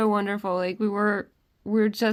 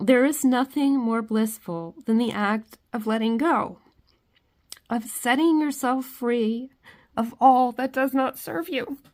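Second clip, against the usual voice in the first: tearful, crying voice, close to breaking down; 3 semitones higher than usual. Speaker reading a passage aloud to viewers: crying, voice breaking. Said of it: "I cannot say that without breaking down".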